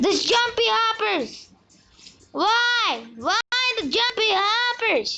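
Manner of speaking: angry and frustrated. Complaining about a bad game upgrade, getting super angry. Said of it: "super angry right now because this upgrade".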